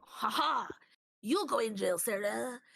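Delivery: put-on French-accented speech, ha-ha laugh. Retelling what Zeus said while escaping jail: Zeus voice with French accent. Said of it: "In that exact voice".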